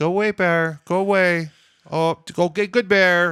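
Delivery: high-pitched, meek, scared, timid little pleading voice. Demonstrating the wrong way to shoo a bear, in a mock-timid voice. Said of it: "you got to not be timid".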